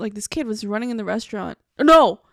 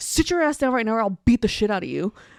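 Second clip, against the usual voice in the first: mock angry scolding tone. Retelling scolding a running kid on a night flight: imitating own angry scolding. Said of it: "And I was so mad".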